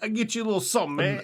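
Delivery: put-on big Italian man voice. Retelling a story, imitating the man who offers to cook; big Italian guy voice. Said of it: "he's like a big fat Italian guy".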